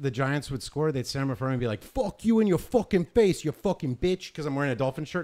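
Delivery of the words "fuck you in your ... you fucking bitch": put-on, loud, drawn-out aggressive stadium-style taunting. Retelling what fans said to someone in a Dolphins shirt: imitating aggressive heckling. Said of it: "really aggressive fucking behavior".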